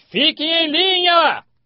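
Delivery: mock shrill yell, very high and loud. Recounting a vision, the speaker repeats what he screamed at the line: retelling a shout. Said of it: "Eu gritei".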